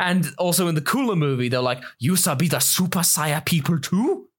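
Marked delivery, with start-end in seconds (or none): 2.0-4.2 clumsy, badly dubbed-sounding broken English voice. Quoting a line from the Cooler movie's dub: offensive broken-English dub voice. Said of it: "I sound really offensive".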